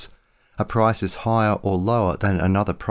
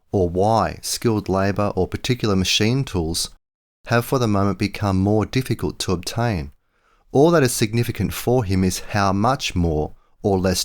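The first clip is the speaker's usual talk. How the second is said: usual speaking voice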